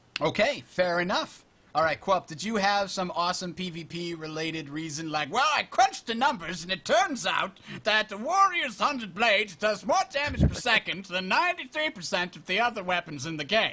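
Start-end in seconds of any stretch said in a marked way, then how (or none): 5.3-13.7 put-on, high-pitched nerdy British accent. Imitating another speaker's imagined answer: British nerd accent. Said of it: "I just gave you a British nerd accent".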